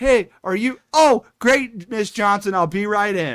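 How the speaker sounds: loud, high calling voice. Acting out a knocker-upper waking clients: acting out a knocker-upper. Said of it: "Goes down to the next house".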